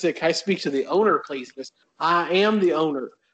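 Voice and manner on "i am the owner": put-on, slower Southern accent drawl.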